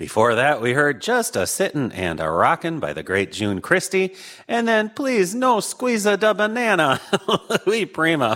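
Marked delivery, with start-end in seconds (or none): 4.5-8.4 Minnesotan announcer accent showing through, pitched up. Old-time radio show host talking to listeners, in a minnesota accent. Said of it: "my Minnesota accent is really coming through right now".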